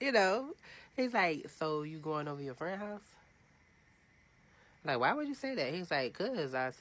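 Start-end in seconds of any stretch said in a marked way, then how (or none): 1.6-3.0 put-on sarcasm, higher pitch. Retelling a man's question after hearing the speaker works a double, mock-sarcastic retelling. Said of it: "now he was like getting sarcastic".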